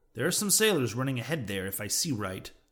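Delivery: plain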